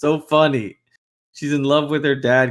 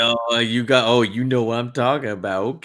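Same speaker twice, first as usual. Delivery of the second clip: mock shady, secretive-sounding talk. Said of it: "talking like a drug".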